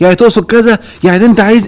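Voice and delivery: worked-up accusing voice, high and loud.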